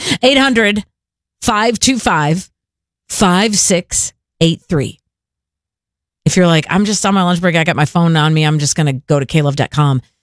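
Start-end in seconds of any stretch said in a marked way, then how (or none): 0.0-5.0 very slow, deliberate, each digit spaced out. Giving listeners the fundraiser phone number, very slow. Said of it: "let me give you the phone number really slow".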